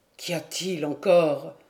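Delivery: rough, hoarse growl gnawed by pain. Narrator reading Dagorn answering before his friend names himself, hoarse pained growl. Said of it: "une voix rauque, mangée de douleur, gronda".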